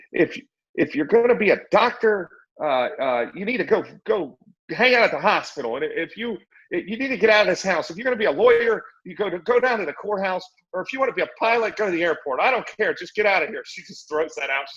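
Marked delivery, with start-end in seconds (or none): 0.2-13.7 high, scolding yelling. Retelling a mother ordering her son out: imitating a mother screaming. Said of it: "She's screaming at him".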